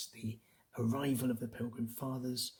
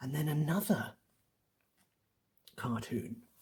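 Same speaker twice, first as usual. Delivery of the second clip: ordinary delivery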